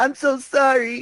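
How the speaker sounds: put-on very high, stuffed-up, congested head-cold voice. Recalling a cartoon scene, Tails answering another character, Tails voice with a cold. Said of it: "Tails' voice is just like sounds like he has a cold".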